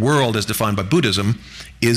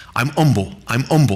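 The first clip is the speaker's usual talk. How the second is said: put-on Cockney accent, humble and self-effacing. Describing Uriah Heep from David Copperfield, quoting him in his Cockney accent. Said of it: "he's always in his Cockney accent".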